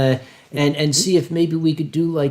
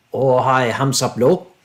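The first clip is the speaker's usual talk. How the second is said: deep voice rumbling from low down; 3 semitones lower than usual. Speaker voices a dragon spirit coming up to the listener, Great Dragon Spirit voice. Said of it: "rumbles in that deep voice".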